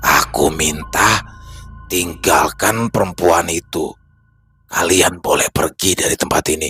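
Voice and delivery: deep, resonant growling voice, echoing. Narrating a story, an unseen voice from upstairs speaks to the group; echoing, growling voice. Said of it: "suara yang terdengar menggema dengan terus menggeram".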